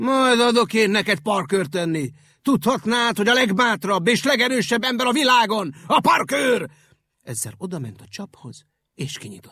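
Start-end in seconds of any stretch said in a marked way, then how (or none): 0.0-6.7 very loud, furious, angry bellowing roar. The park keeper stops laughing, stands up and answers the rabbit: angry bellow. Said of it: "egy nagyot bömbölt".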